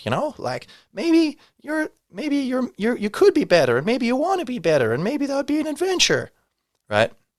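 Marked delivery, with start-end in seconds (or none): 0.9-6.3 very high, mock rant as a parody. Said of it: "someone like Jordan Peterson saying".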